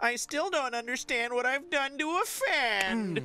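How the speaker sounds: exaggerated, whiniest possible voice, very high. Reading a merchant's line aloud in the whiniest possible voice. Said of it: "who I'm going to read in the whiniest possible voice".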